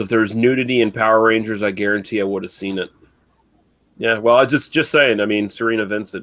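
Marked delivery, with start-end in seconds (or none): none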